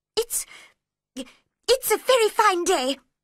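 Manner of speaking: anxious, worried voice, very high, very slow, drawn-out. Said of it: "said a worried voice in her ear".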